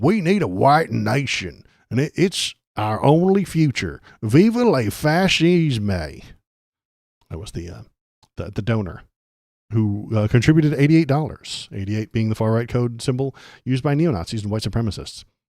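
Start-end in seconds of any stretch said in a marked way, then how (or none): 0.0-6.2 very slow, put-on rural drawl. Quoting a donor's message, putting on a redneck voice. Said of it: "I'm going to put on my redneck voice for this".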